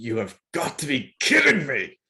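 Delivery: growling delivery throughout. A player voicing Shreem, called up next in the game, growling. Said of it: "Shreem just growls".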